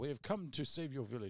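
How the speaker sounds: put-on English-sounding accent. Joking about playing Three Musketeers heroes with swords; English-sounding accent. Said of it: "That sounds more English".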